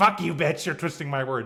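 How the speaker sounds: mock angry, getting-mad tone. Retelling how a woman answered back: imitating someone getting mad. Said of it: "she got mad and was like".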